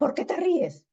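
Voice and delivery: high, indignant delivery.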